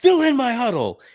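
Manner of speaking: put-on, shrill, very high, barked yell. Retelling a clip where Hurley yells at people behind his huddle: imitating Hurley yelling. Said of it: "he yells back at the guys behind him".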